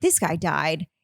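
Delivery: sudden, alarmed, panicked blurt. Retelling hearing a crash upstairs at night: imitating own panicked words. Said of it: "'Cause I immediately panicked".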